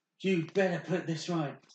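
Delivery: very angry, loud, high-pitched, forceful voice. Narrating a story, voicing Blair Blade confronting Moonbeam, very, very angry. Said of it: "Blair Blade's obviously being very, very angry".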